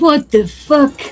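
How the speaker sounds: put-on French accent. Imitating Marco swearing in a French accent. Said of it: "that's my imitation of Marco's accent".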